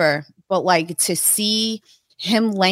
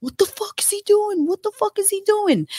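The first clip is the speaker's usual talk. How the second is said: put-on shrill scream, pitched way up; 14 semitones higher than usual. Retelling a cousin screaming beside them at a match: imitating Anthony screaming. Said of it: "he's screaming next to me".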